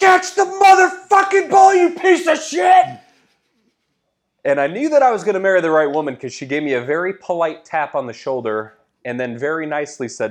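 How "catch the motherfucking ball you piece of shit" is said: top-of-the-lungs scream, very high and loud. Recalling standing on a bar stool screaming at a player who dropped the ball, retelling a scream. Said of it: "just screamed".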